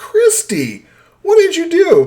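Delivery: mock very high, swooping, drawn-out yell. Retelling coming back downstairs to the dog: imitating own yelling at the dog. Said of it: "I start yelling at the dog".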